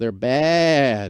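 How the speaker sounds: bleating, baa-ing sheep-like voice. Joking about car lease deals: bleating sheep impression. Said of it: "that's my impression of a sheep getting fleeced".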